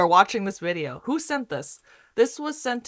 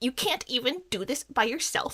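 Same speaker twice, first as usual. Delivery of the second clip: mock bitter, salty tone, higher; 4 semitones higher, 4 dB quieter than usual.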